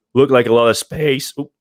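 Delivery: voice cracking, a bit loud. Showing off the panoramic roof in a video, voice cracking. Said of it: "my voice just cracked right there".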